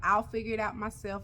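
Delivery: normal talking voice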